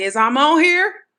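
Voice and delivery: very loud, high, deliberately projected voice. Showing how they sound when making the voice loud on purpose. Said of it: "intentionally make it loud".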